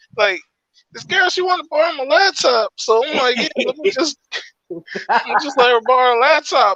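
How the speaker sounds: very high-pitched voice. Retelling what a friend said about lending a girl his laptop, imitating his voice. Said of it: "let me do the voice".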